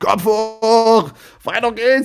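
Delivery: high regional dialect shout.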